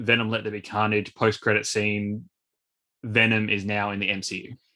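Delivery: ordinary delivery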